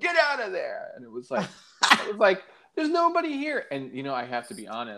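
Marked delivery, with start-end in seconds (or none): 0.0-0.9 mock yelling, much higher. Retelling how an usher yelled at him from rows away, imitating the usher yelling. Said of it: "starts yelling at me from like 30 rows".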